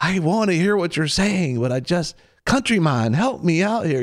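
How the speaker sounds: high, loud pleading voice.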